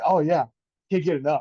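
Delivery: loud, heavy sarcasm with mock, fake eagerness. Retelling a comedian's interview answer, imitating Shane Gillis being sarcastic. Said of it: "being such a sarcastic asshole".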